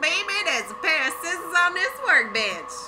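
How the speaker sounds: put-on sassy voice. Voicing what a cat would say, in a mock-sassy voice. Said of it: "Maybe she has the sassy voice".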